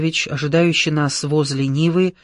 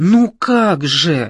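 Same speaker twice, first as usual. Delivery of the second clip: exclaimed with bitterness; 4 dB louder than usual. A man, asking if he is remembered, answers the narrator with a bitter exclamation. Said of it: "с горечью воскликнул человек".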